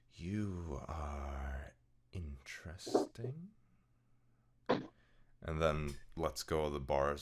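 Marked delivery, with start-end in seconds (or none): 0.1-3.5 ethereal, otherworldly feminine voice with drawn-out are. Narrating a being at the bars leaning in to speak, in an ethereal feminine voice. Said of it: "you hear this feminine voice, almost ethereal sounding".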